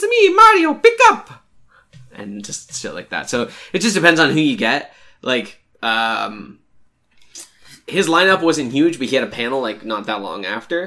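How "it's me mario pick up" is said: very high-pitched, loud raised voice. Retelling a ringtone the Mario voice actor recorded: Mario voice. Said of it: "the dude who does the voice of Mario".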